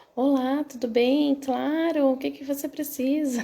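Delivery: smooth, calm, composed and collected tone. Acting out answering a client's call mid-argument: imitating a calm phone voice. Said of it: "Rapidamente a gente consegue mudar a voz, o tom de voz".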